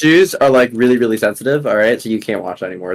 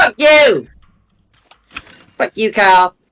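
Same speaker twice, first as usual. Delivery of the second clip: very high, drawn-out put-on voice; 11 semitones higher, 4 dB louder than usual. Acting out what Cartman says after a post: Cartman voice. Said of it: "Eric Cartman just says".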